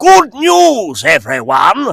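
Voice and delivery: high pitch, swooping. Showing Billy West's voices: Professor Farnsworth voice. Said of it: "Professor Hubert Farnsworth".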